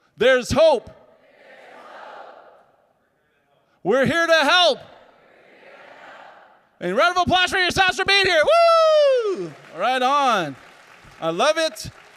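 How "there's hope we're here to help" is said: yelling, higher and louder. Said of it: "we're gonna shout it".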